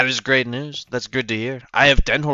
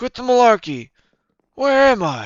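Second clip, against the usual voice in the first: put-on elderly politician voice, higher; 11 semitones higher than usual. Doing a bit while playing, introducing himself: Joe Biden voice. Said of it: "And then there's Joe Biden who goes".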